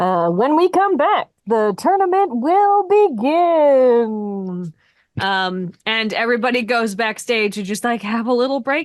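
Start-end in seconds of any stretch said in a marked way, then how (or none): 0.3-4.7 distant announcer, slow and high. Game master narrates an announcer heard from afar, distant announcer voice. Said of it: "distantly you hear the voice of an announcer".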